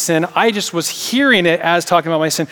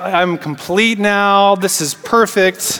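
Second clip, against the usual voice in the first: usual speaking voice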